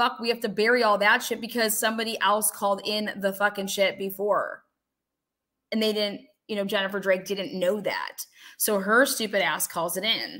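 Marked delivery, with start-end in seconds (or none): none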